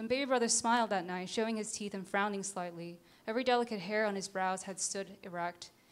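plain

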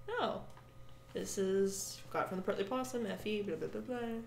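speaking very quietly. Retelling own reply to someone who asked about a tail: speaking very quietly. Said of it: "You're speaking very quietly".

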